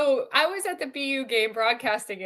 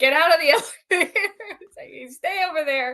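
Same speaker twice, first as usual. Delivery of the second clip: high-pitched yell; 5 semitones higher, 3 dB louder than usual. Retelling yelling at someone trying to get in a full elevator: retelling a yell. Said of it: "I'm yelling at Scott".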